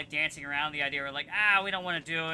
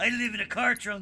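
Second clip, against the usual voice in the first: put-on groveling villain voice, higher; 6 semitones higher, 4 dB louder than usual. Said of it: "that Goldar voice that I did".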